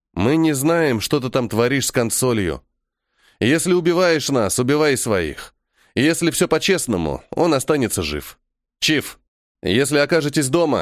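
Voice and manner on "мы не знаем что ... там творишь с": usual speaking voice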